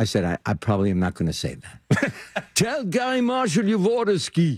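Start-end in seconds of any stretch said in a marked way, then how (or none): 2.5-4.6 put-on very high-pitched voice with German accent. A man recounting his father's repeated urging, imitating his German father. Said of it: "My short German father said to me".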